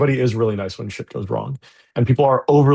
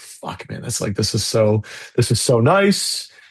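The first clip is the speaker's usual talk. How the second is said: teary, welling-up, tearful crying voice. Retelling being handed a card for a donation: retelling crying words. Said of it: "start fucking welling up and crying".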